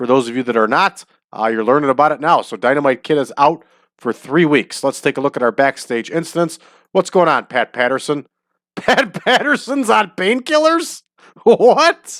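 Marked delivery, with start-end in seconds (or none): 8.8-12.2 high slow laughing in disbelief. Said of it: "I can't stop laughing".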